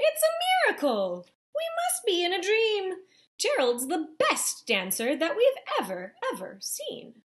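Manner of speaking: very loud, sing-song, swooping high shout. Narrator voicing the animals who watched Gerald dance: shouting. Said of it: "They shouted".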